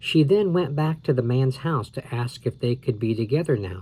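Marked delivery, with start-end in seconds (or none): none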